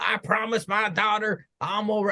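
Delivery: put-on Southern US accent. Retelling what an opponent said after a match, put-on Southern accent as Brian. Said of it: "I don't know why I gave him a southern accent".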